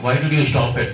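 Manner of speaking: ordinary talk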